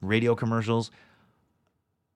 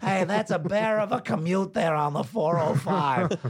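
high, slow, squeaky newscaster voice. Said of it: "what would it sound like if the Ice King were delivering the six o'clock news".

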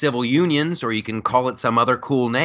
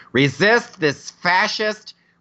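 exaggerated, put-on flamboyant voice, high pitched; 8 semitones higher than usual.

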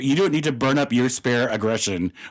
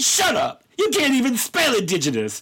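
put-on high-pitched, cutting, dismissive voice. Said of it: "And she's like".

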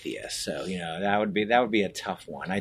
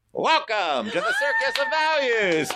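high-pitched, sing-song delivery. Asked if he voiced the clown, he does the Circus of Values clown voice. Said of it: "My wife hates that fucking voice".

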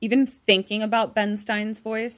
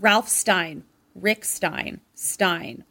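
plain

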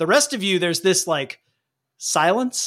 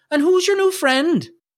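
put-on very high-pitched, heavy Irish accent; 10 semitones higher than usual. Voicing Werebear as he speaks in the story, with an almost-Scottish Irish accent. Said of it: "Almost Scottish there at the end".

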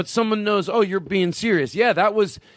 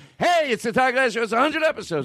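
mock, high, yelled, attention-grabbing show-host shout; 5 semitones higher than usual. Showing how he talks to listeners without headsets: imitating his own yelling. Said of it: "I yell the whole time".

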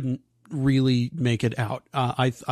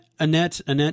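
plain

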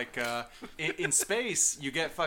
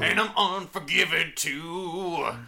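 put-on growly rocker voice, louder; 5 semitones higher, 7 dB louder than usual. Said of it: "He's more, like, growly, like".

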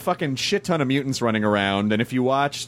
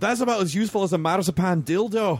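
bad put-on Scottish accent, pitched up; 8 semitones higher than usual. Speaker quotes an actor's first line in The Thick of It; terrible Scottish accent. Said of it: "please forgive my terrible Scottish accent".

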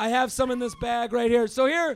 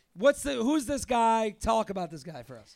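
plain

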